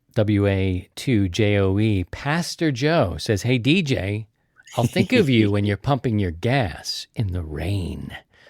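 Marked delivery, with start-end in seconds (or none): none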